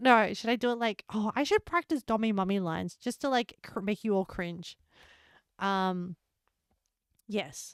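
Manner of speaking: ordinary talk, nothing marked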